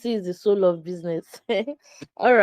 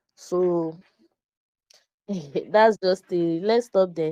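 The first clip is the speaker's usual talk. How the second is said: giggly, laugh-filled, laughing through the words. Introducing herself to listeners, laughing while talking. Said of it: "Why am I laughing so much?".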